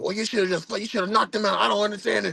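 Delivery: shrill, very high, rapid rattled-off yelling. Speaker retells his dad on the phone about a suspension; imitating dad yelling. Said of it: "my dad is yelling like".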